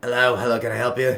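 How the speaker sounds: put-on devilish old man character voice. Voicing the old devilish face at the door: old devilish character voice. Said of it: "this old, uh, kinda slender, devilish looking face".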